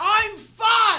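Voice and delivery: high-pitched yelling, hollering. Playing the woman at the mall yelling at her kid: acted mom yelling at her kid. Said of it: "she's yelling at her kid".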